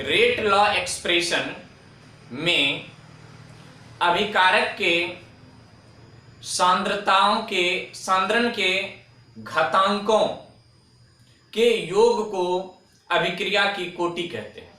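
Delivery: slow, phrase-by-phrase dictation with long pauses. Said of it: "परिभाषा मैं धीमे धीमे बोल रहा हूं".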